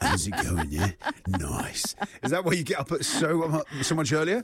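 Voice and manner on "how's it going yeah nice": very low, deep morning voice. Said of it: "it's all like this".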